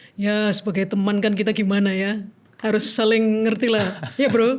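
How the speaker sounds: voice done as a man. Asked by the others to try it, speaking in a male voice. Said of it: "Coba gimana suara, laki?".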